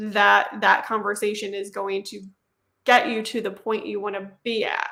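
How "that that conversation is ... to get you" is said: usual speaking voice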